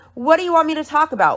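icy, uncaring, dismissive, zero emotion. Retelling a reply to a demand to speak: imitating a cold, dismissive tone. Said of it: "with zero emotion, very cold, very dismissive".

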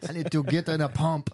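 put-on Austrian accent. Talking to the others as though everyone were Arnold Schwarzenegger: Arnold Schwarzenegger voice. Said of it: "talk to each other as though we are Arnold Schwarzenegger".

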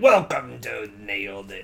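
put-on pirate voice, low. Podcast host welcoming listeners to the show in a pirate voice. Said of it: "I always do it with like a pirate voice".

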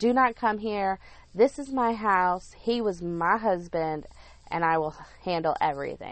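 ordinary delivery

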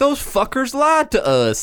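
put-on very strong Southern accent, very high-pitched voice. Quoting people after their doctor answered them: strong southern accent. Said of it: "Like in a Southern accent".

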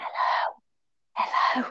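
soft, hushed, frightened whisper. Retelling being too scared to shout for help after having a baby, retelling a whisper. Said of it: "like whispering".

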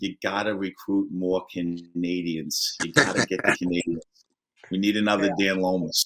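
put-on heavy, laid-on, thick New York accent. Recalling what your grandmother would always say, in her thick New York accent. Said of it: "she'd always say in her thick New York accent".

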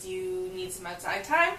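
ordinary talk

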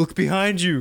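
put-on very high, loud yell. Discussing the Scream movie, quoting a character there: retelling a yell at the TV. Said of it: "Randy is yelling at the TV like".

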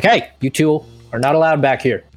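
loud, booming tone. The narrator voices Cyrus catching two characters in the back: big booming Cyrus voice. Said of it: "the big booming voice of Cyrus".

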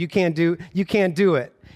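plain

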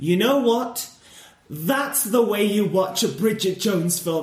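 mock confident delivery. Retelling what the boyfriend said on their first date: imitating a confident remark. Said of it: "he just said it with such confidence".

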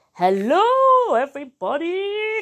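very loud, high, booming, drawn-out all-out yell. Reading a story aloud, Grampy Rabbit greets everybody at playgroup: Grampy Rabbit's very loud shout. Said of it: "Grampy Rabbit has a very loud voice".

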